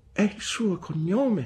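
weak, feeble, faint, high voice. The narrator's mother explains to an indignant woman, faintly. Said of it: "spiegò fievolmente mia madre".

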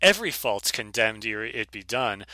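ordinary delivery

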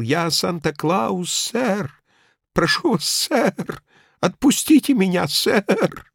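shaky, quavering mumble. Narrator reads the old man squirming in Judlip's grip, trembling and mumbling. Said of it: "он дрожащим голосом промямлил".

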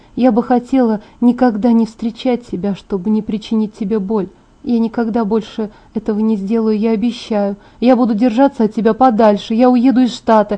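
ordinary delivery, nothing marked

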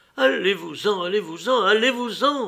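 high, pained outcry of physical pain. A wife answers her husband without looking at him, crying out as if in pain.

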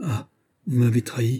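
startled, sudden alarmed cry. A woman looks up at the pastry cook and cries out: crying out. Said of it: "elle laissa échapper un cri".

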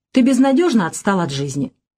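ordinary delivery

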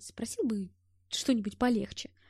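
ordinary delivery, nothing marked

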